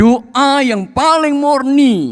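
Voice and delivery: paling murni said high, loud and slow.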